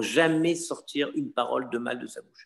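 plain

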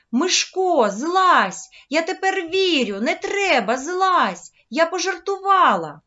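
frightened cry, high and loud. A girl cries out to a boy dangling by his hands, frightened cry. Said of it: "Женя злякано закричала".

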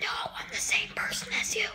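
hushed, very quiet, soft whisper. As your whispering self, answering your own voice that told it to shut up, whispering. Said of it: "I'm just whispering because I feel like it".

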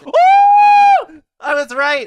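drawn-out, whooping, ecstatic shriek, very loud, very high. Reviewing a pizza and finding the score guess was right, screaming with excitement. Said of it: "Sorry for screaming".

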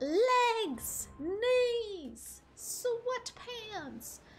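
strained high voice. Streamer running the sweatpants check on stream; attempted high-pitched voice. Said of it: "I cannot go high-pitched today. My throat will not allow it".

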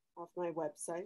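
very low, very quiet mumble. Asked how random guys got the phone number, answering while mumbling. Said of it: "mumbling again".

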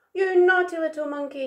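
very cross, loud, fast shout. Big monkey, landed on by little monkey, shouts at him: shouted crossly. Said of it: "he shouted".

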